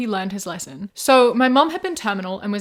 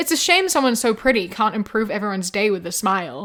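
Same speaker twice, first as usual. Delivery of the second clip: normal talking voice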